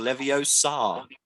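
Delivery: slow, drawn-out LevioSAR, last syllable stressed.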